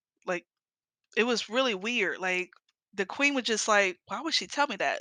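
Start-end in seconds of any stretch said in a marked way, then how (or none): none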